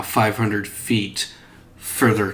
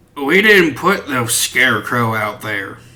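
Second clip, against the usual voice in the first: put-on elderly man's voice; 3 semitones higher, 4 dB louder than usual. Narrator voicing an old man heard from inside one of the houses, old man voice. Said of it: "a voice from one of the houses that you can hear of an old man".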